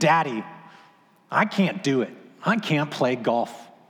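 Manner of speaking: slow, exasperated, frustrated, giving-up tone. Retelling how Madeline came back into the closet: imitating a frustrated complaint. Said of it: "this time frustrated".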